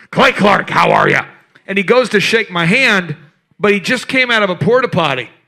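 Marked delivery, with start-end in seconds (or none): 0.1-1.2 booming, very loud, aggressive, rough, hearty voice. Retelling meeting Alex Jones in line: imitating Alex Jones, very loud and aggressive. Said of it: "Very loud, very aggressive".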